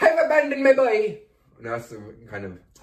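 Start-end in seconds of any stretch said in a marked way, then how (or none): 0.0-1.2 high-pitched Irish accent. Asking about an audition as a priest, the speaker demonstrates: Daniel Day-Lewis Irish accent. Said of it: "Did you do like an Irish accent".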